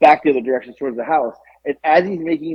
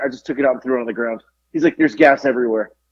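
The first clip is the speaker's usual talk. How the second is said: ordinary talk, nothing marked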